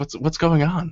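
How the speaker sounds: confiding, hushed stage whisper aside. Narrator voicing the guard as the party passes by; Elfaric half-whispering. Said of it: "He whispers to you as you pass by".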